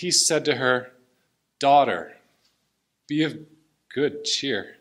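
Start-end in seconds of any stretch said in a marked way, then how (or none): 1.6-4.6 tearful, choked-up voice catching with tears. Speaker reading a healing story aloud, tearing up. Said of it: "I'm tearing up".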